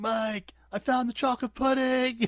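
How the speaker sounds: very high yell with cracking voice. Describing a show character finding food, imitating Dustin's cracking yell. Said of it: "the way he yells and his voice cracks".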